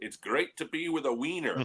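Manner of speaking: put-on speaking with Spanish accent. Quoting the tagline of a New York hot dog commercial in Luis Tiant's Spanish accent. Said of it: "in his Spanish accent saying".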